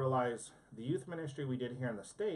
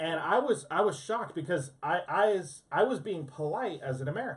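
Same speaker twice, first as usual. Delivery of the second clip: ordinary talk, nothing marked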